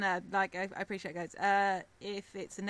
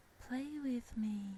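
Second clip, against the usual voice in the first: put-on faint, tiny half-whisper in a little child's voice; 4 semitones higher, 5 dB quieter than usual. Narrating a scene, voicing a small child right behind the listener, tiny half-whispering child voice. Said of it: "you hear a tiny whispering voice of a small child from right behind you".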